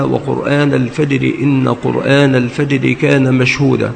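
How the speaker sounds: ordinary delivery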